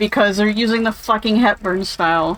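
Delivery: plain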